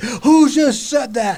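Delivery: put-on drill instructor voice. Retelling a boot camp scene from a film: R. Lee Ermey impression. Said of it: "And then R. Lee Ermey".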